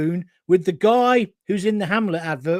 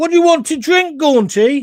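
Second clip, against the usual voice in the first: put-on high, loud, broad Brummie accent; 9 semitones higher, 6 dB louder than usual. Retelling how a Cockney man offered you a drink, Elphick voice turned Brummie. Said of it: "that's become a Brummie".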